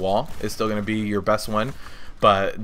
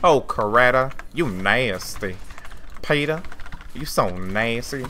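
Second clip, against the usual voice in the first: slow, stretched-out cartoon character voice; 2 semitones higher than usual. Naming the only Family Guy voice they can do, the speaker does Cleveland's voice. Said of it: "he's like".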